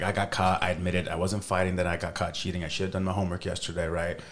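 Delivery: normal talking voice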